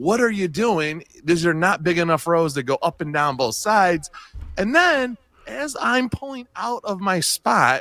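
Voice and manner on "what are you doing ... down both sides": ordinary talk, nothing marked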